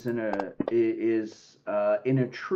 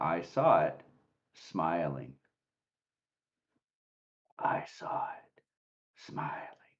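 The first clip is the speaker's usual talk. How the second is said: low, hushed whisper within a raven's caw; 7 semitones lower, 7 dB quieter than usual. Narrating a raven that caws at the listener: low whispering voice in the caw. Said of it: "a low whispering voice in the caw".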